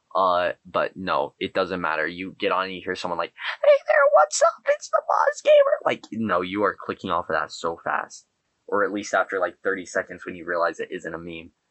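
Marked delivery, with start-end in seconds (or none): 3.6-5.5 very high, loud, shrill, squeaky voice. Imitating a gaming video intro in a very high-pitched voice. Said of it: "four octaves higher than it is now".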